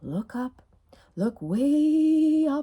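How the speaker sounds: soothing, warm, gentle tone, eased out slow, stretched way. Recalling a beloved old TV show for the others, in The Big Friendly Giant voice, warm, gentle. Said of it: "such a beautiful healing voice".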